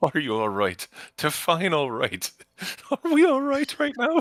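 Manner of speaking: very high, swooping talk, chuckling through the words. Retelling a story, voicing a character calling down to another, acting out laughing while talking. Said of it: "he just kind of laughs to Sophia".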